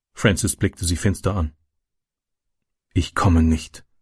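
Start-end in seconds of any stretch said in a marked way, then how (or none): 2.9-3.8 stage half-whisper, pitched low. Narrator reading Francis answering her after glaring at her, in a half-whisper. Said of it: "flüsterte er".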